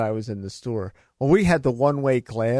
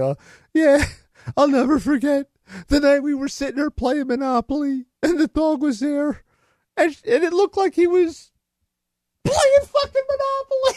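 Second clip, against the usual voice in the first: very high, tipsy, rambling woman's voice. Retelling a drunk woman remembering her dog: imitating a drunk woman. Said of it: "So she's all drunk".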